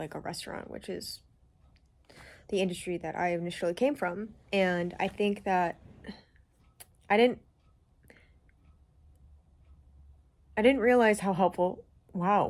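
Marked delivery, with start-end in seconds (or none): 4.5-12.5 emotion welling up, choking up, holding back tears. Talking about a part-time restaurant job, getting emotional, holding back tears. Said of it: "I wasn't expecting to get emotional in this video".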